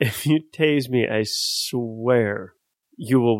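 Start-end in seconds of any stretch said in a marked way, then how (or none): none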